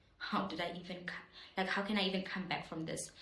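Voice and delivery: ordinary talk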